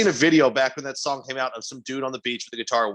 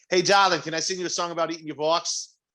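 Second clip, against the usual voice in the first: put-on, fake Boston accent; 4 semitones higher than usual. Podcast co-host delivers a crude pickup line, in a put-on Boston accent. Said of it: "That's actually a good pickup line in Boston".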